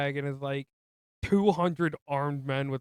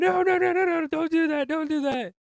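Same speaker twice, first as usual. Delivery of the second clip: put-on very high, loud, repeated crowd-like shouting; 14 semitones higher, 5 dB louder than usual. Retelling a movie scene where everyone shouts at one man: imitating people shouting. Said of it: "everyone just starts shouting at him".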